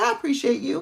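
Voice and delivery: put-on light touch of Southern accent. Quoting a man from the South who asked about an event, little Southern accent. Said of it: "with his little Southern accent".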